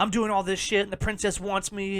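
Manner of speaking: usual speaking voice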